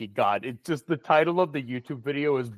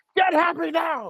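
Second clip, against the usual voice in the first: put-on yelling, higher and louder; 4 dB louder than usual. Imagining an old war veteran cheering on students: imagined screaming. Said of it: "Just screaming at a group of children".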